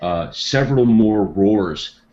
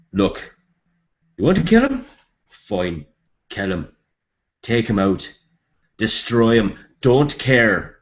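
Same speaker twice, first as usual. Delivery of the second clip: put-on Irish accent; 2 semitones higher than usual. A game master voices a gnome speaking to the four players: Irish accent for gnome. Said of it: "if I'm screwing up this Irish accent".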